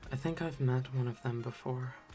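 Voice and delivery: very quiet, voice dropped down low. In a tabletop game, a player speaks as her character, lowering her voice a bit. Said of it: "She lowers her voice a bit as she says".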